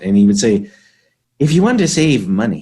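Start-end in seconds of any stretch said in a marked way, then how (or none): 1.4-2.6 put-on very broad, heavy Scottish accent with swooping pitch. Quoting a saying of Bob Shields: heavy Scottish accent imitating Bob Shields. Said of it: "very heavy Scottish accent".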